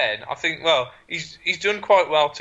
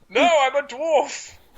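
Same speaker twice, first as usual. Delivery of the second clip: very high, squeaky, put-on Norwegian accent; 10 semitones higher than usual. A character questioned about being a dwarf, Norwegian accent. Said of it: "it in Norwegian".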